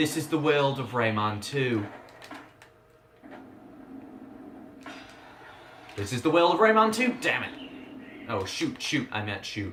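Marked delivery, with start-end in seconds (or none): 0.0-7.1 pitched-up British accent, reviewer-style voice. Speaker repeating a game intro line, doing an early-2000s british game reviewer impression. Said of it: "my best impression of a early two thousands British game reviewer".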